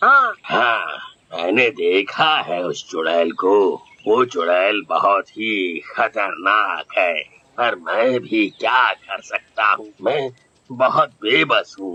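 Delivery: put-on very low, elderly man's voice. Cartoon village headman answers villagers pleading for protection from a witch; elderly man's voice. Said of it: "मैं ठहरा बुजुर्ग आदमी, / मैं ठहरा बुजुर्ग आदमी, / मैं ठहरा बुजुर्ग आदमी, / मैं ठहरा बुजुर्ग आदमी".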